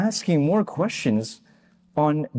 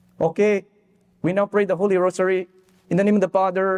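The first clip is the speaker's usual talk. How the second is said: strong imitated Filipino accent; 3 semitones higher than usual. Retelling a scene with the whole family in the living room, strong Filipino accent. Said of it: "strong Filipino accent".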